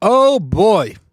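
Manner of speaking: big, loud, full-throated yelled exclamation. Opening the show right after clips of game calls: yelling. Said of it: "Sorry if I just yelled in your ear".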